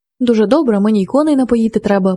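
ordinary delivery

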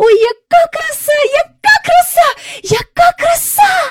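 very high, delighted, joyful, drawn-out calling out. Just off the carousel with the others, she calls out joyfully. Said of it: "гукала Джейн".

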